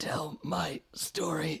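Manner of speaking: hushed, soft, high little whisper. Voicing a character's last words in a comic scene: soft whisper. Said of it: "softly whispers".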